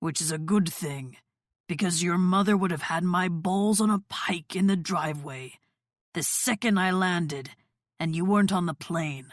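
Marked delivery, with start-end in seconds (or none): none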